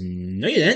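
ordinary talk, nothing marked

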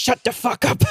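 put-on thick Czech accent. Retelling what Bianca said after someone's answer, in Bianca's thick Czech accent. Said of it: "goes in her thick Czech accent".

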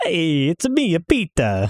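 put-on sing-song Italian accent. Introducing himself on a podcast while stuck in a Mario voice. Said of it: "I'm stuck in Mario mode".

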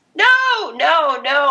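yelled frantically, high-pitched and protesting. Telling a story about their own past experience, retelling their yelling. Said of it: "I'm yelling".

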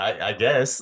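laughing in spite of himself.

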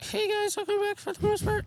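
very high ventriloquist voice, lips kept still. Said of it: "keep your mouth shut".

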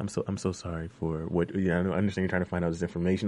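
low, smooth-talking voice. Imitating Fitz trying to smooth-talk Olivia: imitating Fitz's deep smooth-talking voice. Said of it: "he'll put on that deep voice and he'll try to smooth talk her".

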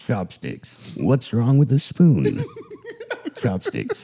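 swooping infomercial announcer, tv commercial delivery. Asked to do it in the voice, performing the chopsticks ad line: commercial ad voice. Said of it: "Can you do it in the voice?".

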